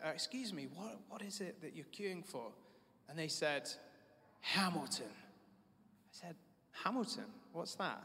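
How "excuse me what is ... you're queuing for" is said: put-on courteous, ever so polite, soft British accent. Asking a stranger in a long queue what it's for, politest British accent. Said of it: "in my politest British accent".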